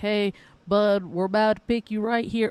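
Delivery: fake, put-on rural country accent. Describing how a coach calls a draft pick ahead of time, in a put-on country accent. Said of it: "I don't know why I put a country accent".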